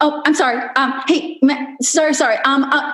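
nervous apologetic voice. Retelling how women chime in on Clubhouse: imitating someone speaking nervously. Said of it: "who was speaking nervously, who kept apologizing".

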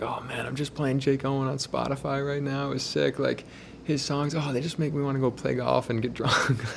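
put-on strong Jersey accent. Speaker retells a fan in the parking lot talking about [name]; imitating a strong Jersey accent. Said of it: "he's like a Jersey strong accent guy".

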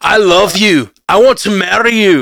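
put-on Scottish accent, loud, slow, angry. Showing how everything sounds angrier in it, in an angry-sounding Scottish accent. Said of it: "but the Scottish accent".

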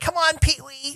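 put-on very high, coaxing, smitten kid voice. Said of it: "that's my best [name] voice".

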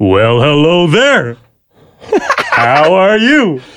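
swooping put-on cartoon bear voice. Announcing an impersonation, then greeting someone: Yogi Bear impression. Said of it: "I'm going to impersonate Yogi Bear".

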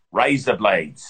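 Australian accent, pitched low. Asked to teach an Australian accent quickly, [name] demonstrates an Australian accent. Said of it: "teach me quickly how to do an Australian accent".

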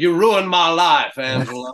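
put-on Louisiana accent. Practicing a Louisiana dialect from an online archive, Louisiana accent like Foghorn Leghorn. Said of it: "I swear that would just sound like Foghorn Leghorn".

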